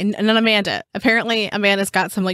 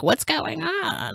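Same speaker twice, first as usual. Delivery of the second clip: put-on weird witch voice, higher and quieter; 8 semitones higher, 6 dB quieter than usual. Acting out the nightly late chat about the trial: weird forest witch voice. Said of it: "we speak like, like weird forest witches".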